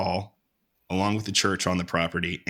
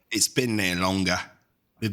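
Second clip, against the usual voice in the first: bad, fake put-on British accent. Talking about old buildings over there, in a horrible british accent. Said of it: "There's my horrible British accent for you".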